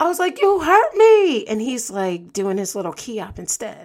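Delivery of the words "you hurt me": shrill, very loud, high-pitched pained wail. Lying on the ground after landing on a shoulder, speaker retells a pained wail. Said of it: "as I'm wailing in pain".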